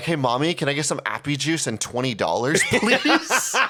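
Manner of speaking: boyish, childlike, sweet-talking put-on charm. Showing how to ask mom for twenty dollars: put-on boyish charm like a little kid. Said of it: "turn on the boyish charm, like I'm a little kid again".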